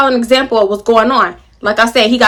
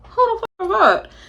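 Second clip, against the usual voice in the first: hushed half-whisper through nearly still lips; 9 semitones higher, 7 dB quieter than usual. Acting out how she asked him about another woman, half-whispering, barely moving mouth. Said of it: "I barely move my mouth. I'm whispering".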